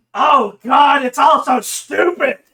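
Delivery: booming bodiless voice. Voicing a disembodied voice that answers the party: loud disembodied voice. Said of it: "A loud, disembodied voice".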